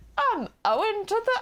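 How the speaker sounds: very high, terrible mock English accent, consonants dropped. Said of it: "drops all the, like, the consonants".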